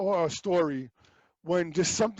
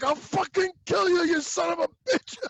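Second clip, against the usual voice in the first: mock raging outburst, furious scream, very high; 11 semitones higher than usual. Retelling the same scene as the actor turns angry: imitating an angry scream. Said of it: "then he just goes into angry".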